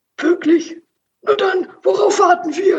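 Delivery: very high voice, called out loudly. The hamster responds to a friend's idea, softly calling out. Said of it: "rief der Hamster leise".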